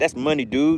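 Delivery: put-on thick Louisiana accent. Repeating a phrase the way a man from Louisiana says it: thick Louisiana accent. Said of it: "He has that real thick Louisiana accent".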